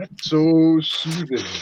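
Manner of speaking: dreamy, soothing, slow high sigh.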